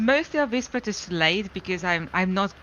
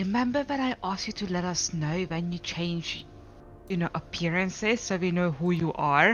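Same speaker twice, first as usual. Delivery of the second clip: hushed half-whisper under the breath; 2 semitones lower, 5 dB quieter than usual. Player's character leans closer to another character, with dragons nearby: half-whispering. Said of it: "I'm whispering".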